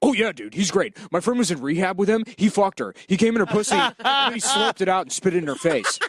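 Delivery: short, gruff, curt, fast, rattled-off delivery. Retelling a friend's answer about booking a podcast guest, imitating a gruff fast talker. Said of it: "very like gruff, like he just speaks quickly".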